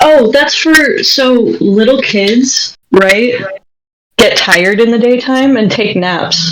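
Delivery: very slow, mocking, sarcastic delivery. Answering a question about a nighttime daycare attendant: sarcastic. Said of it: "Sorry for being so sarcastic about it".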